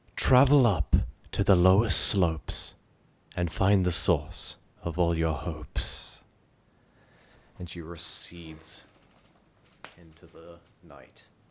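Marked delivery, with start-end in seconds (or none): 0.2-6.3 booming echoing voice, much louder. Narrator voicing her as she speaks to the party, booming echoing voice. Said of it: "it booms out in a echoing voice".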